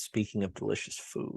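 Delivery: soft, mocking tone. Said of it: "why did you start that with".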